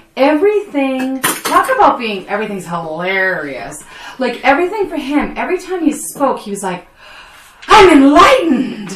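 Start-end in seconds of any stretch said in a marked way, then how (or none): 7.7-8.9 hammy, overacted, over-the-top, high and loud. Mocking an over-actor's every line, mock over-the-top exclamation. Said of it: "tone it the fuck down".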